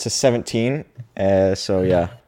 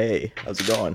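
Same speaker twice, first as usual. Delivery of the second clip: suave character voice, quieter; 6 dB quieter than usual. Showing a variation of a made-up character voice: super suave Slurp voice. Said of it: "I can make it super suave and be like".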